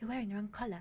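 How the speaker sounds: nervously spoken dryad voice. Voicing a dryad who walks up nervously to a player: nervous dryad voice.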